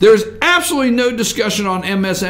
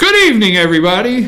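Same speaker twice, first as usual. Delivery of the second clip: tentative put-on voice; 3 dB louder than usual. Trying an impression of a broadcast opening, in a Lou Dobbs voice. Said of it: "I'm going to do the Lou Dobbs, you know, I'll try".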